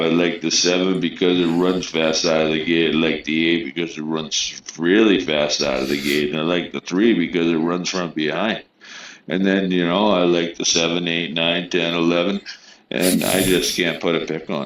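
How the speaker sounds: ordinary talk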